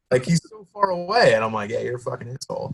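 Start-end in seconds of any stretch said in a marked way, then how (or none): 1.7-2.7 subdued, understated, quiet and hushed. Retelling insulting a guy who is far away, in a quiet voice. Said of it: "Like in this quiet voice".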